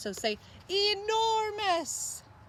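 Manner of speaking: grand, sweeping, high, slow, enormous delivery.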